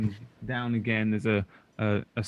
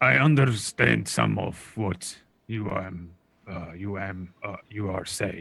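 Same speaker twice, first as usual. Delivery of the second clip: put-on halting, broken old man voice, stumbling word by word. Voicing an old man answering in broken Common: old man speaking broken Common. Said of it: "his sort of broken common".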